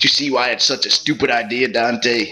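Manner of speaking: put-on Brooklyn accent. Voicing Virgil speaking to Dante, in a Brooklyn Virgil voice. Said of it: "The Virgil from fucking Brooklyn".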